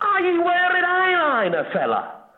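attempted, put-on Manchester accent. A caller asks the man on the left a question, in an attempted Mancunian accent. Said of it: "if you're doing a proper Mancunian accent".

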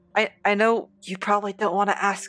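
hushed whisper. In a tabletop game, a player's character leans down to Jem, whispering. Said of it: "motion for a whisper".

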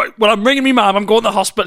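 high, loud, rushed, rattled-off panicked delivery. Acting out one partner at the hospital: imitating a panicking man. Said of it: "I just love the idea of them both standing panicking".

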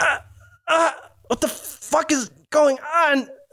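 very high, sudden cry of agony. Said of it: "she's like".

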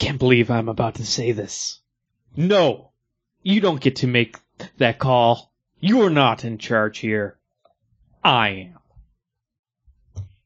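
dramatic comic-book style reading, full drama. Doing a podcast segment reading a comic panel aloud, dramatic reading as Peter Parker. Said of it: "a dramatic reading from Amazing Spider-Man".

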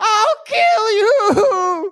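very high, loud monster shriek. Voicing an attacking dragon as it dives at a player: dragon screaming. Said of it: "You can hear it screaming".

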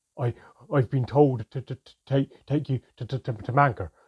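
halting nervous stammer, very loud and very slow. Flesman speaks to the narrator after the elves arrive; nervous stammer. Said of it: "Flesman stammered nervously".

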